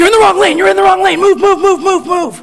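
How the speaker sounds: mock very high, shrill, loud, repeated screaming. Retelling how a father suddenly screamed from the passenger seat: imitating dad screaming. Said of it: "he just starts screaming at me".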